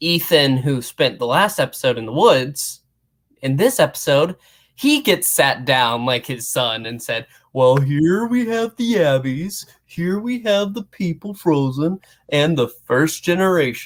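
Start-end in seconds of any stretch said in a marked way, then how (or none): 7.5-13.9 dim-witted, dopey-sounding character voice. Retelling a character's explanation to Ethan: imitating a character in a dopey voice. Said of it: "I said it in a dopey voice".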